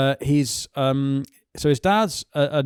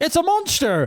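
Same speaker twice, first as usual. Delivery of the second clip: put-on West Country accent, very high; 14 semitones higher than usual. Recalling what a woman said about something's size, in a West Country accent. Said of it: "was it in a West Country accent?".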